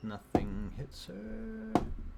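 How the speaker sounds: high, slow, drawn-out dramatic reveal tone.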